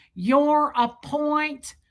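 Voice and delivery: imitated heavy Midwest accent. Retelling a conversation, the speaker quotes a man, imitating a thick Midwest accent. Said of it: "It's so thick".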